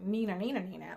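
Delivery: ordinary delivery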